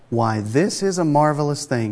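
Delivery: ordinary delivery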